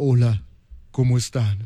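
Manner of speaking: low, man-like, just-woke-up morning voice. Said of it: "Imagínate Karina todas las seis de la mañana levantando".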